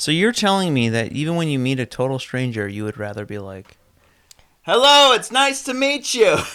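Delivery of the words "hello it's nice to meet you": loud, very high-pitched yell. Arguing about greeting a stranger, show the greeting by yelling it. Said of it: "Why are you yelling at me?".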